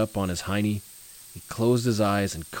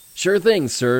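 proud, raised and high voice; 8 semitones higher, 7 dB louder than usual. Markey replies to Tim's request: proud. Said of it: "Markey spoke proudly".

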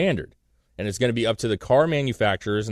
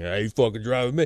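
put-on drunk, slurred speech. Retelling what a drunk friend told a police officer: imitating a drunk friend. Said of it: "like he was drunk".

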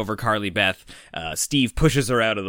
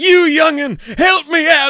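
put-on elderly man voice, higher and louder; 9 dB louder than usual. Retelling a scene where a bully turns into an old man: old man voice. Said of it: "he actually becomes, like, an old man".

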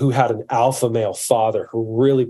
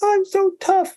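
put-on very high-pitched crying baby voice. Retelling a story of a baby who fell and is told he's tough, imitating a crying baby. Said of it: "And he's crying".

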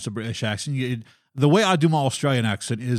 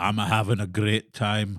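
put-on Scottish accent; 3 semitones lower than usual. Explaining a favourite accent to use, then giving a quick Scottish accent. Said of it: "And so my Scottish is".

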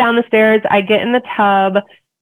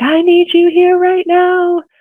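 acted, piercing, very high-pitched, urgent yell; 10 semitones higher than usual. Retelling labor in the tub: imitating own past yelling. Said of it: "I'm yelling every time a contraction comes".

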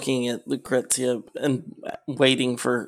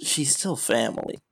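hushed, quiet whisper; 5 dB quieter than usual. Playing a character who whispers to a companion in a tabletop game: whispering. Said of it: "Lupix is going to whisper To uh".

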